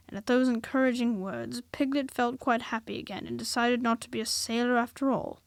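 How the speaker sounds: plain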